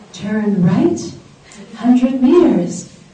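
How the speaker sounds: sweet, little, feminine sat-nav voice. Retelling the first drive with the GPS giving directions: imitating sweet little feminine voice. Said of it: "this sweet little voice, this feminine voice".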